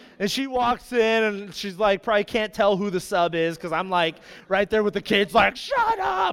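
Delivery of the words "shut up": acted-out very high, frantic, out-of-control screaming. Retelling snapping at loud kids as the sub: imitating own frantic yelling. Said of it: "losing my mind".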